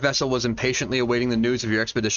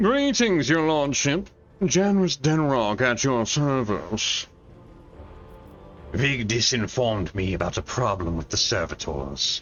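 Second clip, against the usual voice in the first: put-on rich man voice, slow and swooping. Voicing Janus Denrock as he greets his lordship; Janus Denrock rich guy voice. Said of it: "I had rich guy voice for you".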